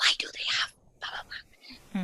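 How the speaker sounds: shy, very quiet, almost soundless little whisper. Retelling what a child asks at firefighters' cars: imitating a whisper. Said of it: "He will whisper to me".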